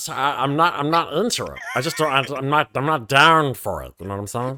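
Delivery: halting, stumbling cartoon character voice. Turning down the plasma smuggling plan, in Meatwad cartoon voice. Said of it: "Meatwad, is that you?".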